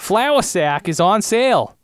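high, loud, silly accent of unknown origin. Riffing on a mock commercial, the speaker voices the ad in an unplaceable put-on accent. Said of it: "I don't know what accent I'm doing right now".

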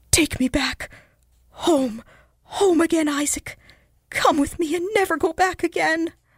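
whispering in horror. A woman speaks to a man before he can say a word, in a horrified whisper. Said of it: "she whispered with a look of horror".

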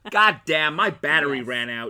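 very loud, fake, put-on American accent. Quoting a line from the movie they are watching, put-on American accent. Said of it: "Why are you coming out with all these American accents?".

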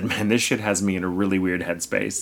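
ordinary talk, nothing marked

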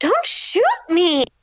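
high in-character shout, yelled out. Throwing a rock at the person who shot them: in-character shout. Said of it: "I'm gonna shout".

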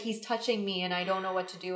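put-on crying, tearful girl voice. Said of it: "my cousin was crying".

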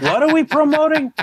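high, fast clueless confused babble. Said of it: "He's gonna go".

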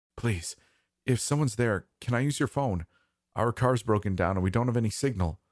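nearly panicking, on the verge of panic. A stranded man calls through a door to whoever is inside, close to panic. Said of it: "His voice sounded close to panic".

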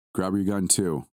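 plain

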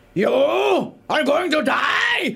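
put-on German accent. Retelling what a German character said, in a German accent. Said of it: "this German one that said".

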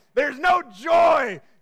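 put-on grim, intense tone. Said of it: "the tone of it".

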